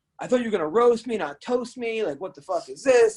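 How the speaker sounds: high, indignant, put-on mad, put-out griping. Retelling a show guest's complaint about not being roasted: imitating someone getting mad. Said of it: "he kept getting mad".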